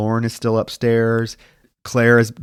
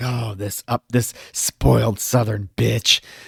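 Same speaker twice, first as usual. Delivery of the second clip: put-on muttering under breath. Retelling a movie character's comments outside the car: imitating muttering under breath. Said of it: "making these comments under her breath".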